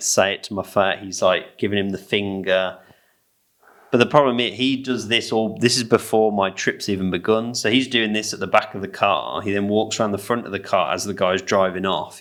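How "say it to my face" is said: ordinary talk, nothing marked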